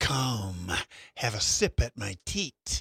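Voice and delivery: slow, drawn-out, hissing dragon voice. Speaker voices the beast, the dragon; hissing dragon voice. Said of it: "she hisses".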